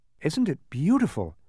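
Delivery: gasping exclamation. Narrator reading Milo's line as he looks out at the view, gasped. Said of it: "gasped Milo".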